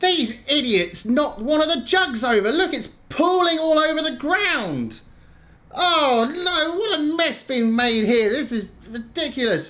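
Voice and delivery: very high, complaining, fed-up bugbear creature cry. Voicing a bugbear crying out about a spilled jug: bugbear crying out in complaint. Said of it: "You hear a voice cry out".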